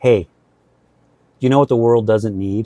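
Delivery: put-on dead-serious, solemn delivery. Retelling what a freshman physics professor said, imitating a very serious tone. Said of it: "he says to me in a very serious tone".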